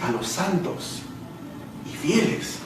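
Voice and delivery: santos and fieles slow, soft.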